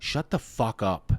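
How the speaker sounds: coaching voice, low and coaxing. Retelling a stranger crouched low, talking like a baseball dad: imitating a baseball dad coaching. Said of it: "definitely under that tone for sure".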